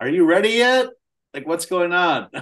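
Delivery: loud, high-pitched piping voice. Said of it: "pipe out".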